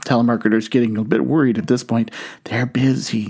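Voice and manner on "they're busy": put-on child's whispering voice. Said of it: "Still whispering".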